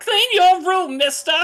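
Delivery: very high, very loud, shrill angry-mom voice. A game master voices a figure answering a player's plea, angry mom voice. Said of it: "angry mom sound".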